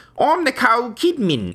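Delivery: put-on Norse accent, pitched way up. Imitating an actress in a Viking film: Nicole Kidman in a Norse accent. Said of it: "like, Norse accents".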